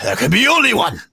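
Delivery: bellowing barbarian voice.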